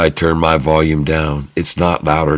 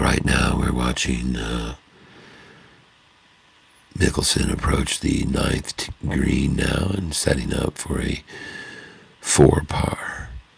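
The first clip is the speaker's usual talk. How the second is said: quiet, soft, hushed golf-commentator narration; 4 semitones lower, 8 dB quieter than usual. Commentating on mickelson approaching the ninth green, in a hushed golf commentator voice. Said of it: "I often do the golf voice".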